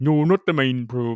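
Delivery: bubbly, underwater-sounding voice. Doing a joke impression of the line: underwater bubble voice. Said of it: "I'm underwater".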